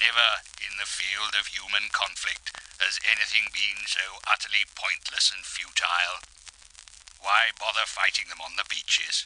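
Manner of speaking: put-on depressed speaking voice. Comedy bit presenting a mock Churchill war speech: mock-depressed Churchill speech.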